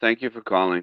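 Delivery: mock negative-sounding voice. Mocking how some people answer the phone, imitating a negative phone greeting. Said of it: "it's giving me the negative vibe".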